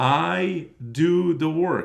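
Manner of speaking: deliberately drawn out, very slow, loud emphasis. Speaker addresses video viewers who haven't understood, speaking very slowly. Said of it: "let me say it real slow".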